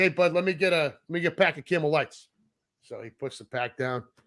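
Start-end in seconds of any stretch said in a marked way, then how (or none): none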